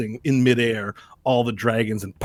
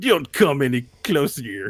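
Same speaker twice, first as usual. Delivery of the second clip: put-on Russian accent, higher pitch; 3 semitones higher than usual. Retelling a story, the speaker quotes a man with a revolver: put-on russian accent. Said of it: "With a Russian accent".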